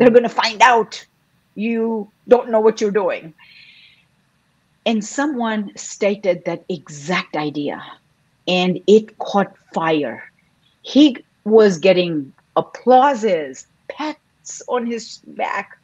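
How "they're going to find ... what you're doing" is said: put-on loud, fearful voice. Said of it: "my voice of fear, loud".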